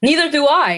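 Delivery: trying to sound angry. Asked to say the line angry, trying to sound angry. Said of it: "I'm trying to get angry".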